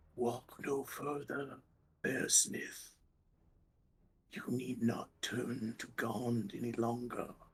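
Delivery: hushed, barely voiced whisper. Voicing a figure whispering from the shadows behind a player: whispering voice. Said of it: "the rattling of bones and a whispering".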